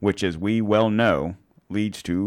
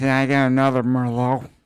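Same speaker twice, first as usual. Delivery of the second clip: put-on slurred drunken voice, words smeared together, pitched up; 5 semitones higher, 3 dB louder than usual. Adding to another speaker's impression, slurred Nancy Pelosi impression. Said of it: "little more slur in it".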